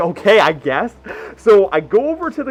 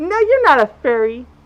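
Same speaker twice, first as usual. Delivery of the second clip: put-on effeminate girly voice, higher; 7 semitones higher than usual. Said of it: "the most effeminate, girly voice in the world".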